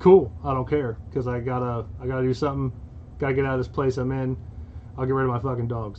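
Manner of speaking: usual speaking voice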